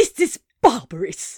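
furious, angry hissed words. Reading a story aloud, a furious character hisses at another. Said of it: "he hissed".

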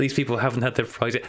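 plain

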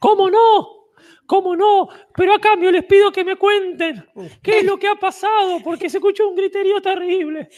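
very high, squeaky little cartoon mouse voice. Playing a farmer who calls to the travellers, in a cartoon mouse voice. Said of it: "¡Es Mickey!".

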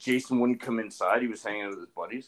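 ordinary talk, nothing marked

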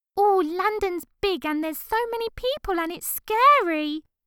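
very high, insulting, mocking put-on woman's voice. Reading a scene where a man mocks a woman's fear: mocking high impression of a woman. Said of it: "His voice rises a few octaves".

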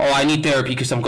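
normal talking voice

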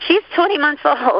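voice cracking at a high pitch. Answering a question about their daughter's age, voice cracking. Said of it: "My voice cracks".

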